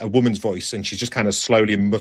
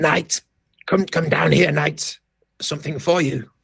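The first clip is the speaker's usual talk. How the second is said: put-on husky old woman's voice, pitched up; 8 semitones higher than usual. A storyteller voices an old woman rummaging in thorn bushes: husky old woman voice. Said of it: "in a kind of husky voice, she says".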